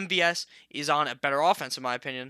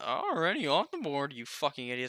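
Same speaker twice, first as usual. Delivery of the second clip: soft voice breaking and cracking partway through; 5 dB quieter than usual. Speaker reacting when it is their turn to pick, voice cracking. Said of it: "Why did your voice crack?".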